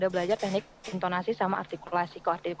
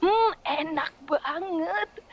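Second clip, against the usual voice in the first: very high-pitched, exaggerated, hammed-up gushing rapture; 10 semitones higher, 4 dB louder than usual. Radio voice-over where food must come across by voice alone, exaggerated. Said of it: "Dilebay-lebayin sih memang".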